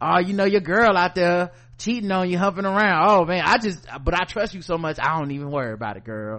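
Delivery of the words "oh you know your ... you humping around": usual speaking voice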